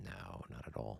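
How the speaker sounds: low, quiet, bone-dry sarcastic delivery.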